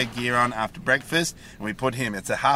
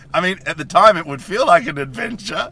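very loud, high, laughing through the words; 6 semitones higher, 8 dB louder than usual. Answering what to call a hike, chuckling while talking. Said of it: "I'm really opposed to your chuckling right now".

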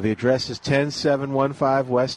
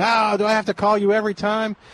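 mock high, screamed griping; 8 semitones higher than usual. Imagining a listener yelling at the radio: imitating Mark screaming. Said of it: "screaming at the radio".

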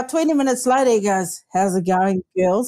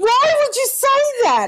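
put-on scream, higher pitch; 12 semitones higher than usual. Retelling how Julie reacted to his comeback: imitating Julie screaming. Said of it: "Julie just screamed".

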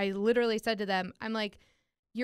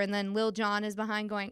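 ordinary delivery

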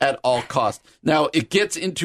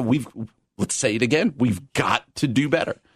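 ordinary talk, nothing marked

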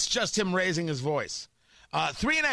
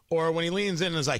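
ordinary talk

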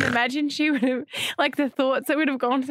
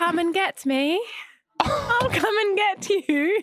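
high, affected, laid-on put-on English accent; 6 semitones higher than usual. Putting on an English accent on request from the others: Hermione Granger voice. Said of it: "You sound like Hermione Granger".

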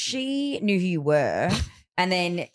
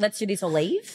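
ordinary talk, nothing marked

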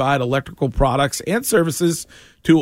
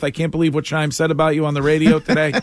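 plain

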